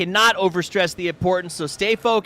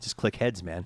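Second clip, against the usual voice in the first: put-on deadpan voice, lower and quieter; 12 semitones lower, 10 dB quieter than usual. Retelling a player's answer to an analyst's question: imitating Zampa's deadpan answer. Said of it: "look at you dead in the eyes and go".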